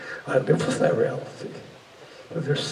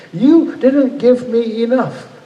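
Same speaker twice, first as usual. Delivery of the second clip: slow, loud furious scream. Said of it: "I was furious, arrogant ... just raw fury".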